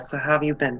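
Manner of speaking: murmuring under breath. Asking another character how they've been during checkups, murmuring under breath. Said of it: "I murmur under my breath".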